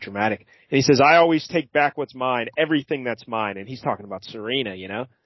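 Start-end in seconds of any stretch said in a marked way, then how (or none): none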